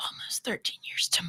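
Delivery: whispering. A couple introducing themselves, one says how long they've been married, whispered. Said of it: "Why are y'all whispering it?".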